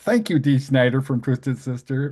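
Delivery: normal talking voice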